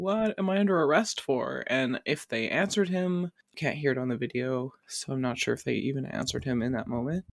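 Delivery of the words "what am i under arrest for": play-acted, loud, high-pitched yell. Describing an arrest video, the speaker acts out the man being pulled down: imitating a man yelling. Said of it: "he's just like yelling".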